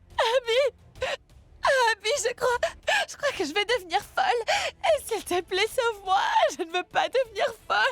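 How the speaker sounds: speaking through tears. In a drama, Tanou answers Abby's questions about what happened, crying while talking. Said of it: "pourquoi est-ce que tu pleures?".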